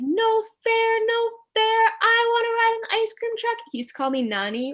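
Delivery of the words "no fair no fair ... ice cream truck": play-acted very high yell of a small boy. Retelling how the little brother protested about the ice cream truck, imitating him yelling. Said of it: "my brother is like yelling".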